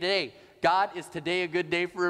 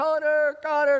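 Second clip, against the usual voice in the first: put-on frantic, desperate, high yell; 9 semitones higher, 6 dB louder than usual. Recalling his four-year-old lost in a mall: retelling screaming for connor. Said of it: "I'm screaming for Connor".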